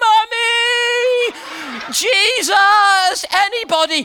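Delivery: high screams with mummy drawn out. Retelling a runaway horse ride on a beach: retelling own screaming. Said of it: "And I was screaming".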